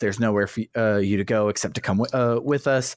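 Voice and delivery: ordinary delivery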